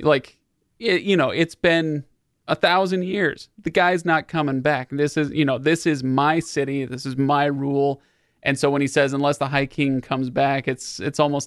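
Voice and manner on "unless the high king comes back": ordinary delivery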